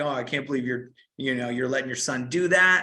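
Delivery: mock muttering under breath. Retelling a relative's negative comments at dinner: imitating muttered comments under breath. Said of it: "the comments under her breath".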